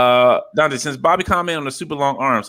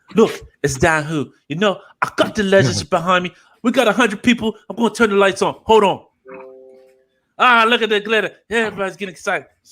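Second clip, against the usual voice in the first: attempted British accent, pitched up; 8 semitones higher than usual. Imitating a friend from across the pond: Dan impression. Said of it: "That's my best Dan impression".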